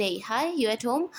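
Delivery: ordinary delivery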